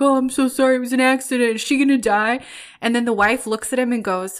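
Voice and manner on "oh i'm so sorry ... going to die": insincere, obviously put-on regretful tone. Retelling a tv scene of a guy faking it after an accident: imitating fake remorse. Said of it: "so clearly faking it when he's like".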